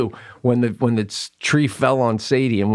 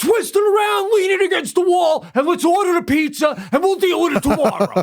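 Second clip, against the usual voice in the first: annoyed, fed-up shout. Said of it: "I'm like".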